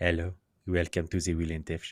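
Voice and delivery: sultry cartoon French accent, about an octave up. Trying out a voice for the show intro, sultry Pepe Le Pew French accent. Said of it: "basically is Pepe Le Pew".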